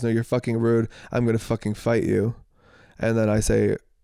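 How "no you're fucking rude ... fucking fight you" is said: ordinary delivery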